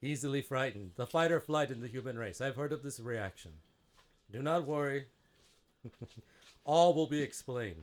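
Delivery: calm booming voice, like a loudspeaker. A giant face in an energy tube calmly reassures frightened newcomers and promises explanations, in a calm booming voice. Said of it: "and you see this giant blue clear energy tube with this ginormous just face, abstract face, / And then in a clear, almost like authoritative, booming voice, like if a loudspeaker had extra bass, / alm".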